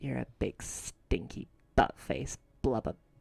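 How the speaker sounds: whispering. Going over to the nearly dead one, whisper in his ear. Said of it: "I'm going to also whisper in his ear".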